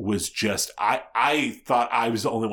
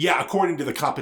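sharp, sudden, abrupt, loud and pitched-up delivery; 7 semitones higher than usual. Recounting how she answered him after the competition, retelling an abrupt loud reply. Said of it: "she very abruptly and very loudly says".

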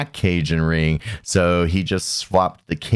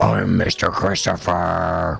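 imitated, put-on monster voice. Teasing the co-host's intro on a spooky podcast: imitating a monster voice. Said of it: "You're giving me like a monster voice".

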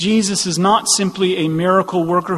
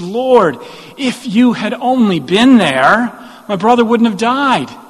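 raised, disappointed, pleading lament; 4 semitones higher, 5 dB louder than usual. Retelling a grieving sister's words to Jesus: imitating disappointed Martha. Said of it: "you can hear the disappointment when she says".

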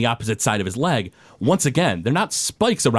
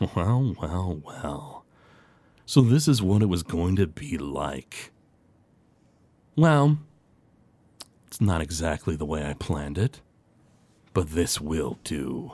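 low, slow, smug monster voice, savoring each word; 6 semitones lower, 5 dB quieter than usual. Voicing a transformed creature who smirks at three players: smirking creature voice. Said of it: "he just sort of smirks in your direction".

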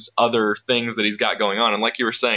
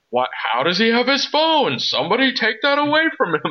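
put-on exasperated exclaiming, very high, swooping pitch; 13 semitones higher than usual. Speaker retells Ford exclaiming during an interrogation scene, imitating Ford's exasperated exclamation. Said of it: "in an exasperated tone".

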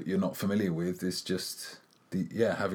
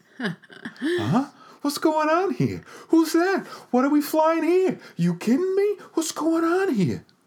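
very high, loud, animated, swooping put-on voice; 8 dB louder than usual. Doing a bewildered movie character as Mark Wahlberg: Mark Wahlberg impression. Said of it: "That was just my impersonation of him".

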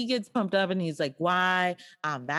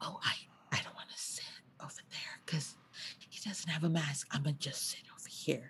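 soft, confiding, barely voiced whisper; 2 semitones lower, 12 dB quieter than usual. Retelling what they whispered to the receptionist in a waiting area, retelling a whisper. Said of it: "I whispered to her like".

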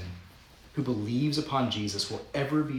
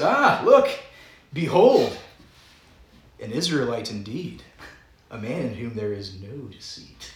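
thick sarcasm, loud, slow and swooping; 7 dB louder than usual. Retelling Scripture while acting out a line: imitating Jesus, super sarcastic. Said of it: "this is super sarcastic".

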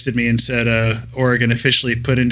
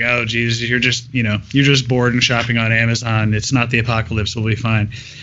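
ordinary talk

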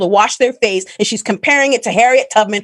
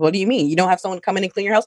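mock condescending tone, quieter and faster; 4 semitones lower, 5 dB quieter than usual. Retelling how a woman spoke to them, imitating a condescending tone. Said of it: "in such a condescending manner".

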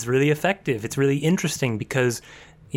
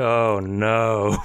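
put-on creepy villain voice, lower pitch; 4 semitones lower than usual. Imitating a villain reacting to getting a cut: imitating Hisoka. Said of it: "he gets a cut, and he's like".

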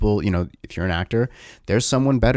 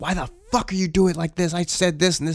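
acted, high-pitched, furious screaming; 8 semitones higher than usual. Speaker acts out stories of a director at the crew, imitating a screaming director. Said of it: "your director screaming at crew".

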